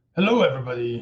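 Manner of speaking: gruff, rough lawyer voice. Reading aloud as Denise Williams's attorney, greeting everybody in a rough attorney voice. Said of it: "This is my rough attorney voice for Jeff Talley".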